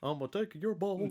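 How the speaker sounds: high, creepy talking-toy voice. Describing a toy and its commercial, doing the Mister Bucket voice. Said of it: "like mister Bucket voice".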